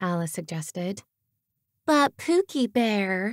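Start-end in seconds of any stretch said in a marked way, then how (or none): 1.9-3.3 whiny, nagging, whining voice. Alice demonstrates the whiny voice a girlfriend might use: whiny girlfriend voice. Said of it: "You could do the whiny voice, ... she whined in example".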